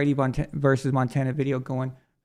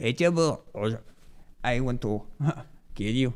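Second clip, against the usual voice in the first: softly spoken with Mexican accent; 3 semitones lower, 6 dB quieter than usual. Mock the listener's thick accent with a bad Melania Trump impression, Mexican accent. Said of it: "that was kind of a Mexican accent".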